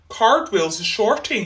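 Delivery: ordinary delivery, nothing marked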